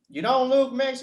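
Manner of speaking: put-on, very high southern Florida accent. Telling others what people with a southern accent said to the speaker, imitating a Florida southern accent. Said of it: "the southern accent from Florida".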